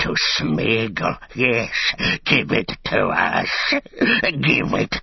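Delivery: plain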